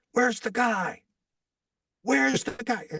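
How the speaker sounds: loud, high-pitched yelling. Retelling a man yelling for the warm-up guy, retelling a loud yell. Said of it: "he yells to them uh, in a loud voice".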